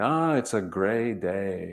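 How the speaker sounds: put-on heavy Russian accent, slow, with drawn-out day. Grandchild quoting a ninety-four-year-old grandmother's reply, thick Russian accent. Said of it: "she said in her thick Russian accent".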